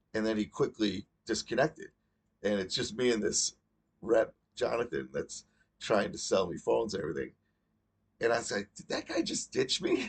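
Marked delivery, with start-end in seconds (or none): 8.8-10.1 play-acted stunned disbelief, very high pitch. Retelling a phone call where the other caller left: imitating own flabbergasted question. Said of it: "I said just like that".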